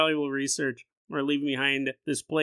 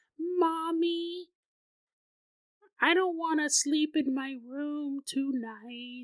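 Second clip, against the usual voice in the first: put-on very high three-year-old baby voice, Mommy drawn out; 10 semitones higher, 3 dB quieter than usual. Retelling a three-year-old girl speaking to her mommy, in [name]'s baby voice. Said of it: "full of baby voices".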